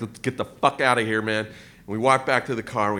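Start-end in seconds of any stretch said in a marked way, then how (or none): 0.0-1.5 mock trembling, lower and quieter. Retelling grabbing someone's arm after the men walk away, acting it out trembling. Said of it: "And I'm like trembling".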